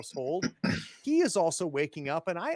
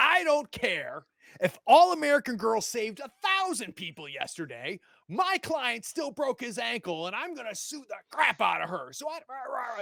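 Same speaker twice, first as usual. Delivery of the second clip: furious, high-pitched angry yelling tirade; 7 semitones higher, 4 dB louder than usual. Voicing the father yelling on his phone at breakfast: yelling into a phone. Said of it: "and he's yelling".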